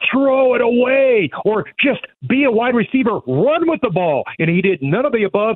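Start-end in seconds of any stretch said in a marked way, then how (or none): 0.1-4.2 put-on high, urgent scream. Retelling a tense play as it happened, retelling own scream. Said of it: "And then I was screaming".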